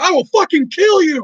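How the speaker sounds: mock screaming, voice pitched way up. Recalling a guy who screamed at Jackson nights ago, retelling a scream. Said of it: "was just screaming at you".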